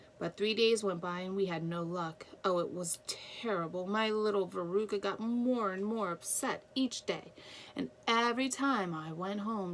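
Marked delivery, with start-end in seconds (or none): none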